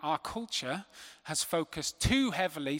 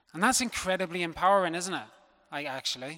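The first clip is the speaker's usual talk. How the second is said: ordinary talk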